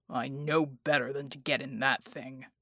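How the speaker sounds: deep, low rumbling voice. Narrator reads Bulwark's reply to Bella, in a rumbling voice. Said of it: "he rumbled".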